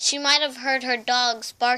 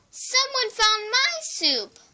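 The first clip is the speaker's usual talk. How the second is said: very high, squeaky sputter, swooping in pitch; 11 semitones higher than usual. Reading the three bears story aloud, Baby Bear's line: high squeaky voice. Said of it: "sputtered Baby Bear in her in her high squeaky voice".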